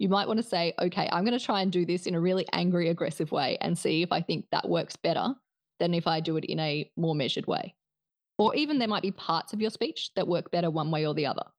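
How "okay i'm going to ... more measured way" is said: plain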